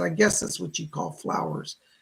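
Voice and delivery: ordinary talk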